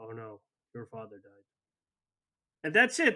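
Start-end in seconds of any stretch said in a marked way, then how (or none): 0.0-1.4 low, hushed, emotionless monotone, acted deadpan. Complaining about game voice acting, imitating a line delivered emotionlessly. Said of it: "it's so emotionless".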